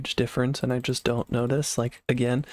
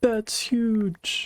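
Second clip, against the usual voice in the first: very high, exclaiming voice; 10 semitones higher than usual. Imagining another player's reaction to a find: Lagundo impression. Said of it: "if this was a Lagundo series, he'd be like".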